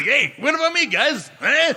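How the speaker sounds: very high-pitched, gritty New York mobster voice. Retelling a funny moment where the handcuffed character is left behind: Colin Farrell's gritty New York mobster voice. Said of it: "this gritty New York fucking mobster".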